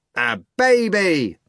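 put-on high shout, drawn out like a baby. A narrator reads someone in a theatre audience calling out to the actor, shouted. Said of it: "someone shouted from the theatre".

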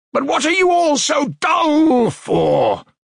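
abrupt, sudden, shrill, high-pitched shout. A man who sat silent among staring companions, suddenly shouting. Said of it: "he shouted suddenly and quite unexpectedly".

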